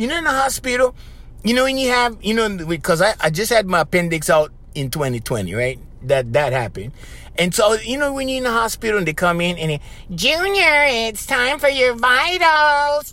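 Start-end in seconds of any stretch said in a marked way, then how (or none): 10.1-13.1 mock irritating extra-loud voice, higher and slower. Recalling a hospital stay, the speaker imitates staff calling for vitals in an extra-loud voice. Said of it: "they do it in that extra loud voice".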